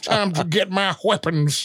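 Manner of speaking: put-on, genteel, distinguished Southern gentleman accent. Voicing orcs as distinguished Southern gentlemen. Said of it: "Why are you saying it that way?".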